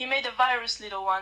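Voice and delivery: ordinary talk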